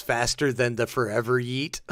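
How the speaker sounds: plain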